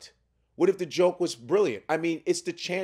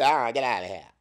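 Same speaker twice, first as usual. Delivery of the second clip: curt, rude, cartoonish, dismissive tone; 7 semitones lower than usual. Retelling how a security guard refused a photo: imitating a cartoonishly rude guard. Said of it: "that's how he did it".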